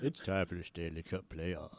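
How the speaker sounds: very soft, smooth, low, hushed late-night voice. Mocking the other speaker's playoff intro in the Power Love Hour voice. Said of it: "all of a sudden you're like".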